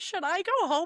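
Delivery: full-blown, high-pitched sobbing, tearful words. Recalling coming to the listener's desk, imitating one's own past self crying. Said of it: "full blown crying, being like".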